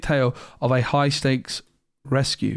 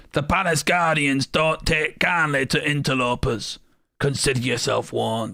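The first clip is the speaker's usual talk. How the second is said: laid-on put-on villain character voice. Attempting a character line, Jafar impression. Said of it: "Is that a good Jafar impression".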